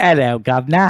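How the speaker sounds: bad, poor, fake put-on British accent. Announcing they'll read a novel aloud, the speaker previews their bad British accent. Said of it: "my shitty British accent".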